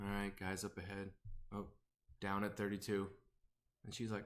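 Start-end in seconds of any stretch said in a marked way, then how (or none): 0.0-3.1 easygoing, relaxed, low, calm chatter. Describing a streamer's very calm gaming group, imitating calm gamers. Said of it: "the most calm group I've ever heard".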